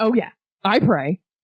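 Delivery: slightly defiant line reading. Coaching a line reading, showing the line with a little defiance. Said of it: "maybe with a little bit of defiance".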